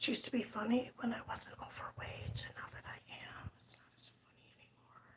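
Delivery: quiet whisper. Talking to viewers about a color scheme, whispering so no one else hears. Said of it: "I have to whisper".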